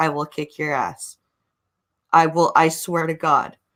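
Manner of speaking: low, flat deadpan, menacing tone. Retelling what a man said to people who came closer, imitating his deadpan threat. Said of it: "He doesn't he he's he's just deadpan".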